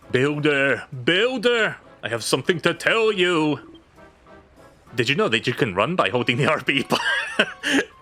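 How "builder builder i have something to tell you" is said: eerie, haunting, spooky spectral ghost voice. Streamer voices a game character calling out to the Builder, spooky ghost voice. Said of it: "went from like a spooky ghost voice".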